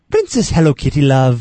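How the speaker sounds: very loud, put-on cartoon mascot voice. Show intro, asked to try the line in the Lucky Charms voice. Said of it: "let's try it in the Lucky Charms voice".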